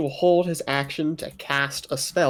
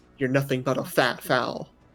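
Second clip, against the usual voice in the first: spoken in a hushed whisper. A player voices the whispered words of a spell at a creature, in a hushed tone. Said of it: "As words said in a hushed tone".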